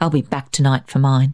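ordinary talk

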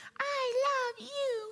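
very high, squeaky puppet voice. Pastor imitating a toy that talks when tickled, Elmo impression. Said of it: "this is my Elmo impression".

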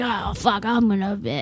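put-on manly voice. Speaker quotes a guy to friends, in a put-on manly voice. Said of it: "when you put the like man voice on".

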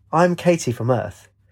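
ordinary delivery, nothing marked

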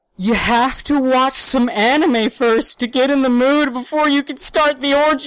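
high, loud, barely holding in laughter. Trying to get a line out without stopping, holding back laughter. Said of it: "I gotta say this without laughing".

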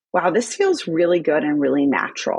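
ordinary talk, nothing marked

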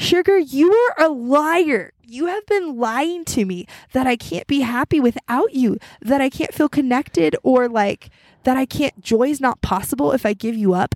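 high, slow, deliberate outcry, liar stretched long. Telling listeners about talking with Jesus on a morning run, retelling her own yell. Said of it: "I started yelling".

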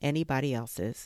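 ordinary delivery

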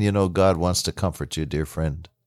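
soft, low, gentle, caring, tender voice. A minister speaking to people who are hurting: tender. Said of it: "I say as tenderly as I can".

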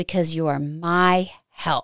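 plain

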